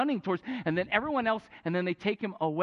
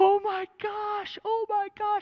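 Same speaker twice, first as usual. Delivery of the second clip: play-acted screaming cry, pitched very high; 12 semitones higher than usual. Retelling a game where the goalie went down, imitating the players screaming. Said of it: "we hear the players start screaming".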